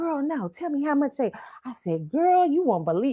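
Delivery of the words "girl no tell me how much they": put-on old woman voice, quieter. Retelling a conversation about ticket prices, imitating grandma's way of talking. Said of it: "That's how my grandma talk".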